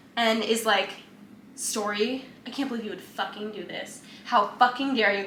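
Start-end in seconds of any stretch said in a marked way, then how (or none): none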